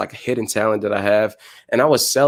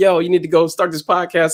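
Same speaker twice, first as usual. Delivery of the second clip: mock yelling, pitched up; 7 semitones higher than usual. Retelling a podcaster urging the speaker to start a podcast: imitating Gary Vee yelling. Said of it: "he was, like, yelling at me".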